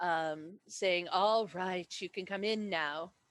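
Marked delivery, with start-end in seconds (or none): 1.1-3.1 half purr, half growl. Narrator voicing an unseen woman inviting the group in, halfway between purr and growl. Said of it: "halfway between a purr and a growl".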